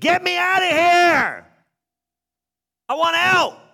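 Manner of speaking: loud, high, drawn-out scream. Retelling how men thrown into a fire cried out: imitating a scream. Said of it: "got thrown in the fire and screamed".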